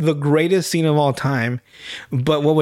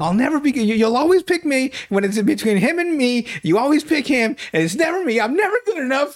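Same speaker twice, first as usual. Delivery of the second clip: play-acted, shrill, very high screamed outburst; 9 semitones higher than usual. Describing a scene where a guy on a bike screams at a girl, imitating a man screaming. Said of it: "he's just screaming like".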